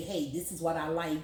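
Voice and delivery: ordinary talk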